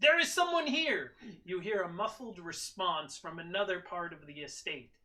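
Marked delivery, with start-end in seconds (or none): 0.0-1.1 shrill, very loud, high yell. A robed figure sees signs of other people, yelling. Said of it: "the figure yells".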